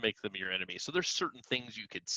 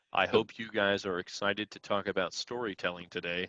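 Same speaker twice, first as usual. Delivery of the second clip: flat droning monotone, no inflection. Discussing bad audiobook narration, the speaker demonstrates a dull monotone voice. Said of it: "Can you imagine if I was talking like that".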